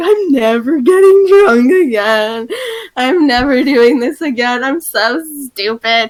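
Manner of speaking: mock weepy, sobbing, slow tearful crying voice. Retelling self-talk in the bath after a drunk night, imitating own crying. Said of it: "I just sat in the bath and cried".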